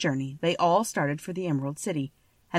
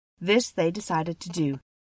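plain reading voice

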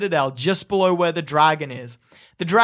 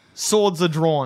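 plain

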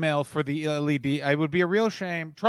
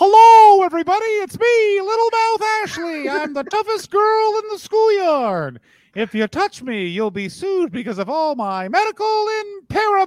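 very high, loud puppet voice, pitch rising higher; 6 dB louder than usual. Voicing a co-host's mouth as she moves it, Little Mouth Ashley voice. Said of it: "I'll be the voice of little mouth Ashley".

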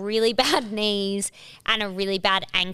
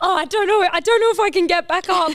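mock panic, much higher and louder; 10 semitones higher, 6 dB louder than usual. Retelling a descent down a cliff, imitating mum freaking out. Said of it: "she was like freaking out".

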